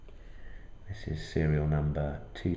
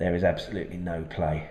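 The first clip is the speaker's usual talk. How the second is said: ordinary delivery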